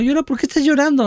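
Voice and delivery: mock very high-pitched, fast, furious shouting. Retelling how your mother reacted when you cried, imitating an angry shout. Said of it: "gritándome enojada".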